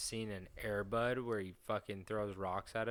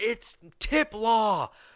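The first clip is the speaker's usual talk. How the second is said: mock yelling, higher and louder; 12 semitones higher, 15 dB louder than usual. Acting out running into a courtroom: pretend screaming. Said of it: "I'm running in the courtroom screaming".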